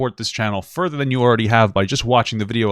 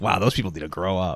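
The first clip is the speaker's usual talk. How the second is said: put-on woman's voice with a teasing tone; 4 semitones lower, 5 dB quieter than usual. Mocking what the woman on the call just said, imitating a woman on the call. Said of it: "good impression".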